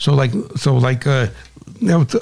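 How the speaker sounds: plain reading voice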